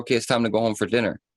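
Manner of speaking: ordinary talk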